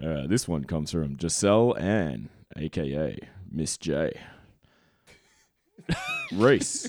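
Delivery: put-on sexiest voice, slow, swooping, seductive. Announcing who a message comes from, in the sexiest voice possible. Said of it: "I can do that in the sexiest voice possible".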